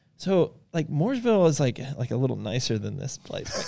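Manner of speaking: soft, acted hesitant, innocent, serious, timid voice. Retelling what someone said to the speaker during a drive, mock-timid. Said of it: "Aaron says real timidly to me".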